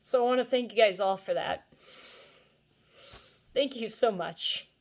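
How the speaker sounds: touched, slightly moved, feeling showing in voice. Thanking your YouTube viewers for their support, a little emotional. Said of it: "I'm getting a little emotional here".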